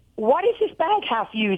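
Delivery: ordinary delivery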